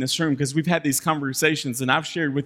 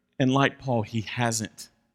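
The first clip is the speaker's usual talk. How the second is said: ordinary delivery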